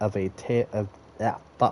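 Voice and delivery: ordinary delivery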